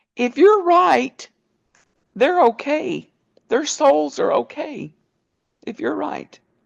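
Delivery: put-on crying speech. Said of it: "she started crying".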